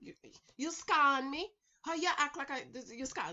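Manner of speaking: put-on Jamaican-accented way of talking. Retelling what men back home used to say: imitating Jamaican guys. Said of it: "That's what the Jamaican guys used to say".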